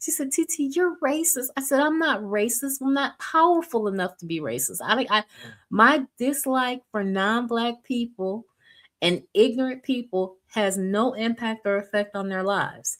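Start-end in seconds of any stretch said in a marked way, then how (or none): 0.3-1.5 mock guileless, innocent, high voice. Retelling what their niece said to them, the speaker uses a mock-innocent tone. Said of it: "it was so innocent".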